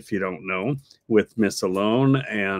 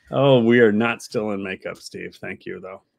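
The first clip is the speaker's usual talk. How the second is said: plain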